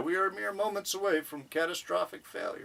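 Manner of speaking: put-on deadpan delivery. Recapping a scene, acting out a character's line deadpan.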